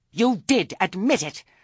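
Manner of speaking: very high voice, shrill as a gull. Narrator reads Missus Earwig accusing Granny, in a shrill voice. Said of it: "Missus Earwig's voice was shrill as a gull".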